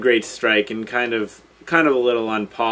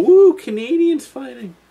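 very high, loud, dopey, goofy put-on voice; 13 semitones higher, 5 dB louder than usual. Previewing fights, mocking what he wouldn't say, in a stupid voice. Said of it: "That was a stupid voice".

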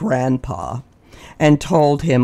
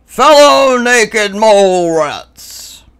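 grand, majestic, heroic, regal proclamation voice, raised; 8 semitones higher, 6 dB louder than usual. Narrator reads Grandpa clearing his throat and proclaiming to the others, heroic regal voice. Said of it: "heroic, regal voice".

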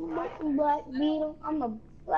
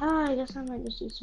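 mock depressed, mopey, glum, defeated voice; 3 semitones lower than usual. Mimicking a man planning to eat peanut butter all day, mock depressed, mopey voice. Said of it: "He sounds like he's so depressed. He's like".

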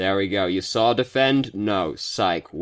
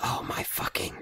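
barely audible, hushed, defeated, beaten-down mutter. Retelling what a teammate muttered after dying: imitating a quiet defeated mutter. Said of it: "really quietly in the background".

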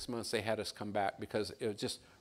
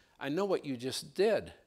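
imitated, put-on broken English; 4 semitones higher than usual. Retelling what a lady turned around and told the speaker; imitating broken English. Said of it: "She says in broken English".

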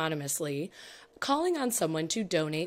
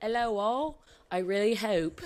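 fake, pitched-up put-on Australian accent; 3 semitones higher than usual. Joking about Australian news: put-on Australian accent. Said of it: "in an Australian dialect".

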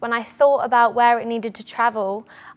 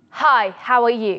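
powerful, strongly projected voice. In a public speaking exercise, greeting someone at the frame's edge, powerful projected voice. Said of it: "Powerful voice".

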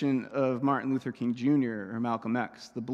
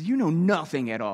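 mock haughty, superior, arrogant, condescending tone; 3 semitones higher, 3 dB louder than usual. Telling the story, speaker acts out high priest Caiaphas standing up, with put-on arrogant tone. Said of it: "he has like this arrogant tone with him".

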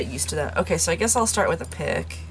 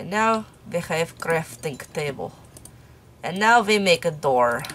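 sudden put-on foreign accent with broken English. Crafting a table and a door, the speaker slips into: sudden put-on accent. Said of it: "I don't know why I suddenly donned that accent".

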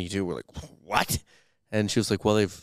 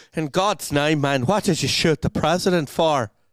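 put-on Irish accent, raised and pitched up; 8 semitones higher, 6 dB louder than usual. Voicing the policeman's demand from a story being read aloud: Irish accent as Kearney. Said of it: "do your best Irish accent for that".

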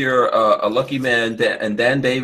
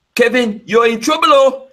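Ghanaian accent, much higher pitch; 12 semitones higher, 5 dB louder than usual. Asked by Lola to do it, the speaker addresses Kevin in a Ghanaian accent. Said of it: "say you're in trouble with the Ghanaian accent".

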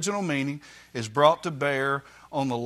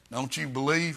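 challenging, objecting put-on voice; 4 dB quieter than usual. Acting out an objector's response to the sermon: imitating an objector's voice. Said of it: "I always use that voice".

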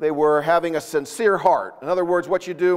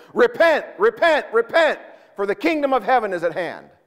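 street preacher voice, raised, pitched-up yell; 6 semitones higher than usual. Retelling a preacher calling out to passersby in the street: imitating John the Baptist yelling. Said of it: "yelling at them".

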